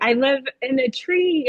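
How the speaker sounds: normal talking voice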